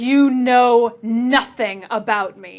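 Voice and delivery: loud, vicious, menacing snarl. Game narrator voicing her as the dome watches and cheers: snarling. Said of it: "she snarls down at him".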